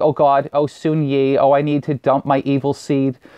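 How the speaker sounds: slow, drawn-out, funny put-on silly voice. Retelling a radio skit line, Woody Allen voice. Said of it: "skits where he sounds like Woody Allen".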